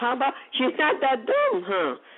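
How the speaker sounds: high, sarcastic, jabbing tone. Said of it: "I'm being sarcastic here".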